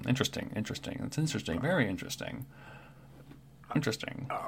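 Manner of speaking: whispered mumble under the breath to oneself. Imitating people at a bar examining things, mumbled 'interesting' to oneself. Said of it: "they're mumbling to themselves a little bit. It's like".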